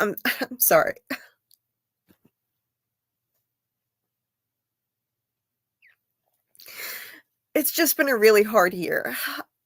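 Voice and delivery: tearful, crying, speaking through tears. Speaker breaks down while speaking, apologizing, crying. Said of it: "I'm crying".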